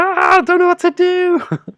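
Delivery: very high-pitched, very loud, full-on shrieking scream. Retelling a game where a sister panicked under bombardment: imitating sister screaming. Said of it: "she's just screaming, like".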